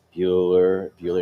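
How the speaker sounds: flat, monotone teacher voice. Speaker recalls the teacher in a movie calling a name, monotone teacher voice. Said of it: "you get that monotone voice".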